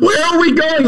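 shrill, very high, shrieking scream. Imagining a getaway drive out of the neighborhood, shouting from the front seat: screaming. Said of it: "I scream outside the window".

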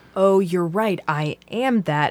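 ordinary talk

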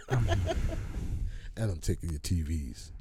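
put-on deep voice. Speaking to a podcast co-host, in a really deep voice. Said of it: "you said that in a really deep voice".

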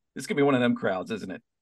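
ordinary talk, nothing marked

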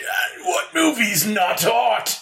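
high croaked-out voice of the dead. Telling a spooky made-up scene where a corpse lunges and speaks, croaking corpse voice. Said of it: "kind of croaks out".

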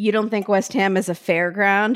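mock sarcastic tone. Retelling a judge's dismissive remark about a football team: imitating a sarcastic remark. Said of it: "very sarcastically".

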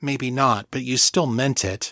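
plain

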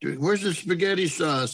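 loud, high calling out. Retelling calling out for the sauce while cooking: retelling own yell. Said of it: "So I'm yelling".

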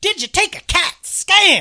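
very high, very loud, drawn-out, slow comic delivery. Acting out the detective's question in an invented movie plot: Chris Rock impression. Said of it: "That's my best Chris Rock impression".

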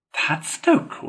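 scornful, contemptuous, dismissive, very high pitch. Rat remarks to Toad after the door closes: contemptuous. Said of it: "said Rat contemptuously".

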